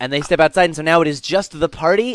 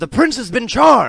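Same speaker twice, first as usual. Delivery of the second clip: muffled voice, somewhat higher in pitch; 7 semitones higher than usual. Voicing someone heard outside a door as the game master: muffled voice through a door. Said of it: "a muffled voice through the door that says".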